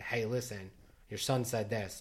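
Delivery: ordinary delivery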